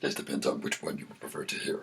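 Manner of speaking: very deep, creaky, whispered demon voice.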